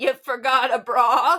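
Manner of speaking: put-on elderly man shouting. Retelling how Ozzy waddled up the hill and yelled to the speaker, imitating Ozzy yelling. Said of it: "he just yells to me".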